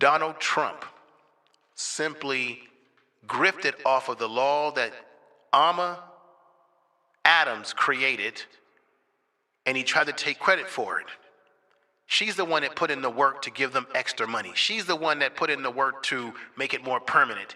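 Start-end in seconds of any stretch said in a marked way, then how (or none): 0.0-11.1 very loud and slower. A speaker tells listeners who really created a law, speaking very loud. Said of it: "I'm going to say this very loud".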